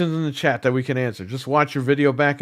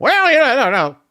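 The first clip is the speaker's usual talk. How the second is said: mocking cartoonish voice, higher and louder; 11 semitones higher, 6 dB louder than usual. Mocking a guy who sounds like a cartoon character: imitating a cartoonish-sounding guy. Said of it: "He sounds like a fucking cartoon character".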